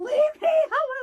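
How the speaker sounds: mock very high, shrill, very loud panicked yell. Retelling being stuck and hyperventilating, the speaker reenacts her own panicked outburst. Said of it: "Like freaking out".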